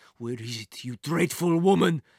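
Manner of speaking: furious voice with rising pitch. Narrating a story, a man searching a room demands from a woman, furious demand. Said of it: "the man demanded furiously".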